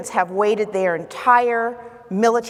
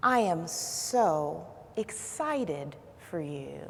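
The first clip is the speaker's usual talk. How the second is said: very quiet, very hushed, soothing murmur; 3 semitones lower, 10 dB quieter than usual. Retelling what a friend said after the speaker's crying, in a quiet soothing voice. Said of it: "in a very quiet and soothing voice".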